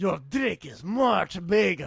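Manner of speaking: put-on Greek accent. Voicing a game character who compliments another character: put-on greek accent. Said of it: "do we have to make him Greek?".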